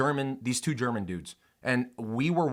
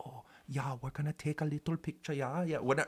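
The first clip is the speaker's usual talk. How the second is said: lousy fake German accent, soft; 2 semitones higher, 9 dB quieter than usual. Mimicking two German dudes standing near a bison: bad German accent. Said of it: "that was a shit German accent".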